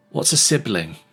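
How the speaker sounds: bright-voiced tone. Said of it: "a bright voice".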